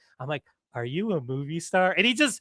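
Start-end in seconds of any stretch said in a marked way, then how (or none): 0.8-1.9 mock sarcastic, faux-innocent, slow delivery. Retelling walking up to a movie star as assistant manager: imitating own sarcastic tone. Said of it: "so I'm being sarcastic at this point".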